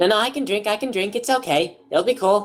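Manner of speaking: high little pixie character voice. Voicing a pixie insisting she can drink: voicing the pixie. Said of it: "And then she".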